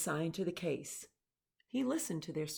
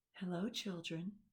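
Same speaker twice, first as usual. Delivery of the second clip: soft, sugary, very sweet voice; 6 dB quieter than usual. Reading a story aloud, someone greets the children in a very sweet voice. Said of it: "someone said in a very sweet voice".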